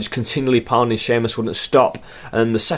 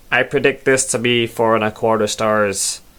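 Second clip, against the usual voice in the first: put-on know-it-all nerd voice. Reading out a tweet that predicted a match rating, in a nerd voice. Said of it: "A nerd voice he put in a bracket, so I thought I'd give it the go".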